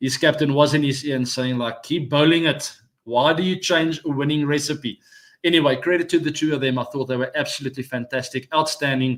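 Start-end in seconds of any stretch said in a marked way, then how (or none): none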